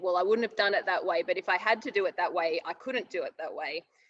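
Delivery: ordinary talk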